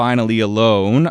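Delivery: normal talking voice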